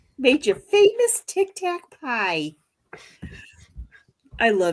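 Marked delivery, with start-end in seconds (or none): 0.2-2.6 put-on Midwest accent, higher pitch. Retelling a movie line at a community picnic: Edie McClurg impression with Midwest accent. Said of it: "But the way she said it, it's like".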